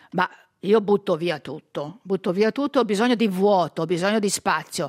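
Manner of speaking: usual speaking voice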